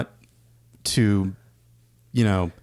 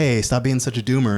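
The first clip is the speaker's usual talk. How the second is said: ordinary delivery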